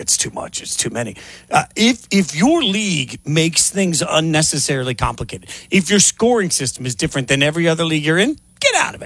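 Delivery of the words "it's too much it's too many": soft, whispered aside to self. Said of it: "I was like".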